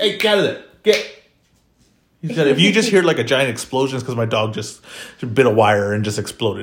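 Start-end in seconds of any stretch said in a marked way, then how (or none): 0.0-1.1 loud, pitched-up yelling. Breaking off mid-conversation to address the dog: yelling at a dog. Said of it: "I'm just gonna yell at him".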